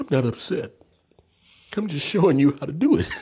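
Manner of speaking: voice near tears. Showing a listener how to cry on command, on the verge of tears. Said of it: "I'm almost in tears".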